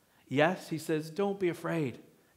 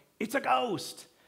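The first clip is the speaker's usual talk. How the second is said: high, terrified, croaked cry; 8 semitones higher than usual. Retelling how the disciples saw Jesus walking on the lake, retelling a croaked cry. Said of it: "They croaked it out".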